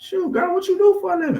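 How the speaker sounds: voice rising in pitch. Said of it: "My, my, my voice going up".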